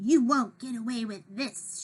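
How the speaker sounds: fierce, menacing hissing voice. Narrator reads a cat's line as she confronts Kitty on a ledge, hissing. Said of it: "she hissed".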